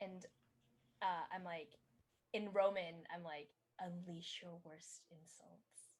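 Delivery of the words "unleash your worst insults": very quiet whisper under the breath. Whispering an order to a glowing trash can: whispering. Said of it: "I whisper to the trash can".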